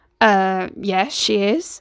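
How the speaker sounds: slightly uncertain. Answering a man's question about his mother, a little unsure. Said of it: "a little unsure about Hassan".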